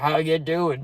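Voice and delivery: put-on very deep old-lady voice. Retelling an old lady greeting him, imitating her very deep old-lady voice. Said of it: "the deepest voice I've ever heard for an old lady".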